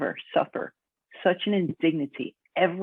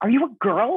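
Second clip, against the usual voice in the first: pointed, accusatory, high and loud; 6 semitones higher, 5 dB louder than usual. Retelling a man questioning a woman competitor, in a mock-accusatory tone. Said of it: "in a very accusatory tone".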